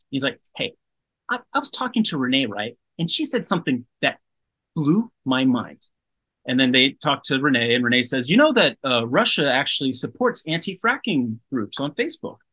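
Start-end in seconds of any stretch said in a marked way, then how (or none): 0.5-5.8 grating public-radio presenter tone. Describing a prominent disinfo researcher, the speaker imitates him in an annoying NPR liberal voice. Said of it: "does like annoying NPR liberal voice".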